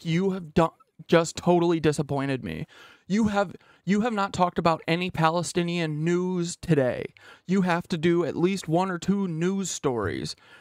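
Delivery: severe, disapproving, really stern scolding tone. Imitating people who are usually nice to her suddenly turning stern, a mock-stern tone. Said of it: "this really stern tone and be like".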